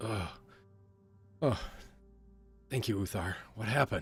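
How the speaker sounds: words delivered through a moan. Narrating a story: a woman being lifted from her seat speaks, moaning. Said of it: "she kind of moans and goes".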